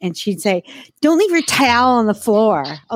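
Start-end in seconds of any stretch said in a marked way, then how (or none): 1.0-2.6 put-on Trenton-area accent. Retelling a fight with a friend from the Trenton area: imitating a friend's Trenton-area accent. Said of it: "Helena can go into that accent too".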